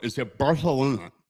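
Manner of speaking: "barcelona" with authentic lisped Spanish pronunciation. Teaching how to say barcelona authentically, demonstrating a lisped spanish barcelona. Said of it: "just like curl your tongue".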